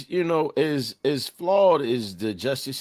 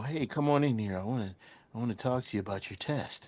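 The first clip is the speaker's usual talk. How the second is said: soft, creepy, luring put-on voice; 2 semitones lower, 8 dB quieter than usual. Warning about predators, acting out a creep's lure in a pervert voice. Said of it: "Why that voice though? That's the pervert voice".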